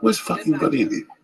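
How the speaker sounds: put-on Greek accent, very high pitched. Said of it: "he had the accent like".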